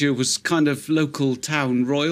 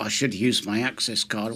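mock sotto voce muttering under breath; 5 semitones lower, 4 dB quieter than usual. Retelling a muttered aside while being scolded, retelling a muttered aside. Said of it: "I'm thinking completely sotto voce".

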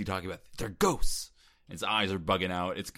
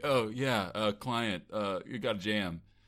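very slow, hesitant, unconvincing line read. Retelling how the lawyer line was said: imitating Keanu's unconvincing line.

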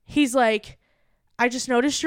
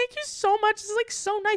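play-acted crying, choked-up, tearful, pitched up; 9 semitones higher, 4 dB quieter than usual. Retelling thanking a drive-thru worker while crying: retelling own tearful thanks. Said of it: "I'm, like, crying".

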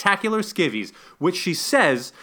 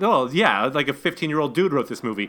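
ordinary talk

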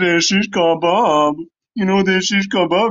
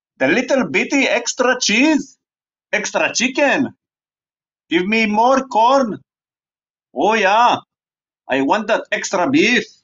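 clumsy, bad, fake Scottish brogue; 2 semitones higher than usual. Riffing on the sin of gluttony: bad Fat Bastard Scottish accent. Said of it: "my Scottish accent doesn't do the trick".

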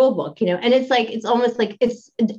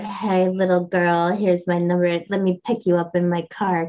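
mock menacing seductive voice, lower; 4 semitones lower than usual. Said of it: "that Rickman thing, that kinda, like, danger".

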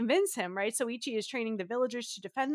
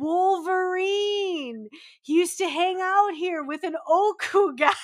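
very loud, slow, drawn-out, raised voice; 7 semitones higher, 8 dB louder than usual. Retelling how she spoke to the monk, loud and slow. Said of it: "say it loud, say it slowly".

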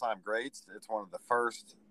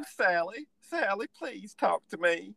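very high, sad, sorry-sounding Southern drawl; 10 semitones higher than usual. Recalling a favourite character pleading with Sally, in Franklin's sad southern drawl. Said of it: "his sweetheart southern drawl".

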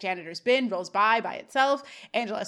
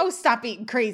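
normal talking voice

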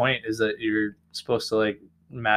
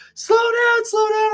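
high, loud, panicked cry. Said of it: "and freaking out".

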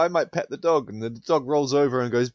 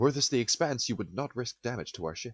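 grave, serious put-on sci-fi officer delivery; 8 dB quieter than usual. Riffing with co-hosts about the show, doing a Star Trek voice. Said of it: "you've done a Star Trek voice".

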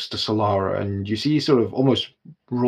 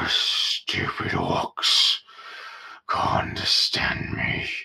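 put-on very slow, creaky drunken giant voice; 4 dB quieter than usual. Storyteller describing a drunk giant leaning against a wall, drunken giant voice. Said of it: "swaying a little bit as he leans".

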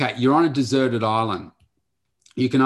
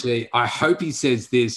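ordinary talk, nothing marked

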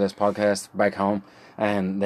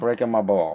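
put-on Italian-accented delivery. Explaining a slang word to listeners, in a put-on Italian accent. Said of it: "That was my Italian accent".

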